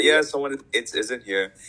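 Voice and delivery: put-on Singaporean accent. Answering a janitor knocking on the cubicle, Singaporean accent. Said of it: "I will use my Singapore voice and say".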